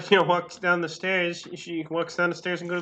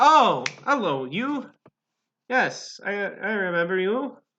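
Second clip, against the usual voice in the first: very drawn-out, unhurried, slow barkeep voice; 2 semitones higher than usual. Voicing the barkeep as a player comes down to talk: voicing the barkeep. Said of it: "He kinda looks at you and is like".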